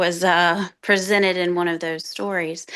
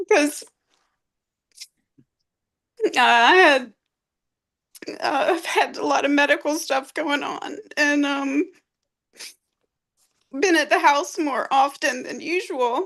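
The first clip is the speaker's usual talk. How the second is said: emotional, choked-up, pitched-up voice near breaking; 8 semitones higher than usual. Talking about a dog's companionship during medical troubles, getting emotional. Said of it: "I'm gonna get emotional for a second".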